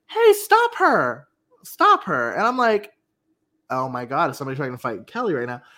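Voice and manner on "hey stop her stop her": mock, very high, shrill, swooping, drawn-out shout. Telling a story, acting out a woman yelling to stop someone, retelling a woman's yell. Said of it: "this woman yells".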